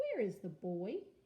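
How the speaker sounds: put-on pitch rises at the end on boy. Reading teacher modeling a question for a student; rising question intonation. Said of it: "your voice should go up at the end".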